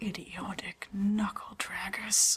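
muttered under breath. Voicing a character's open insult about others: muttered under her breath. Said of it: "under her breath, but not trying to hide it".

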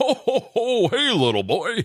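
very high voice, pitched way up. Speaker shows how every kid expects Santa to sound, Santa voice. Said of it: "you know that Santa is like".

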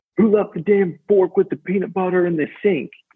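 mock high-pitched yelling. Retelling how a man popped in while the room was making phone calls, imitating someone yelling. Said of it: "he's just yelling".

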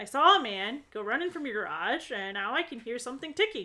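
ordinary delivery

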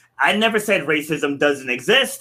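ordinary delivery

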